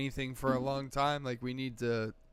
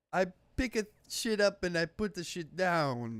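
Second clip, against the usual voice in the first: awful, fake Greek accent, high pitch; 6 semitones higher than usual. Joking about having played Hercules: put-on Greek accent. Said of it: "this is my Greek accent".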